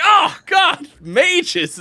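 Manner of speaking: angry character rant, high and loud, spat out.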